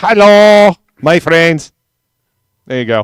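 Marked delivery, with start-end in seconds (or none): 0.0-1.7 very loud, high, very bad fake Mexican accent. Greeting listeners on a stream with a co-host, in the worst fake mexican accent. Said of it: "In my worst fake Mexican ac- accent".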